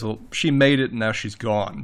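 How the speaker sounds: ordinary delivery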